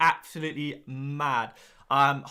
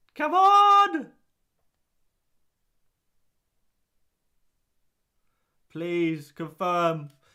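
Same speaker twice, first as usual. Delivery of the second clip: very drawn-out, slow, swooping, panicky pleading; 4 semitones higher, 6 dB louder than usual. Waiting for the app to confirm a captain change: panicking. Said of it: "I'm panicking, I'm panicking!".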